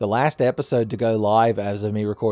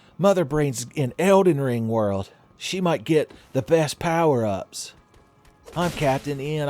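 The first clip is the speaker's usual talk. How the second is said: bad, high-pitched put-on cartoon hero voice; 5 semitones higher than usual. Playing Elden Ring, the streamer pretends to be Captain N, bad Captain N impression. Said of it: "doing a bad Captain N impression".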